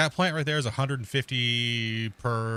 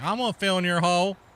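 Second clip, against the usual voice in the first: put-on hillbilly accent with slang, pitched up; 7 semitones higher, 3 dB louder than usual. Retelling what a guy said, with a little hillbilly slang to it. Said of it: "a little bit of like a hillbilly slang to it".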